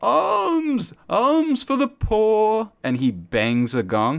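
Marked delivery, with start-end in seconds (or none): 0.0-2.7 very high, shrill, slow scream with alms drawn out. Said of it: "screaming at the top of his lungs".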